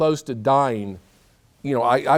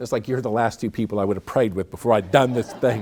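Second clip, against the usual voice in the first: normal talking voice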